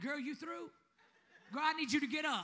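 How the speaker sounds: imitated stern telling-off voice. Imitating how God talks to them: imitating God scolding. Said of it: "He like".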